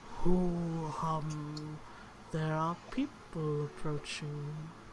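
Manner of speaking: low, deep, creaking tree voice. Narrator voicing the grove of plum trees that the listeners hear, in a deep voice. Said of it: "and then you hear a deep voice".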